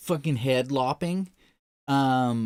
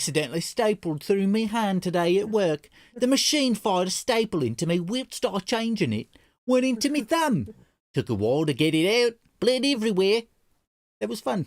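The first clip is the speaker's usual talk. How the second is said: put-on British accent, pitched up; 6 semitones higher than usual. Reading out a message aloud, in a British accent. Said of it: "I have to read it in a British accent".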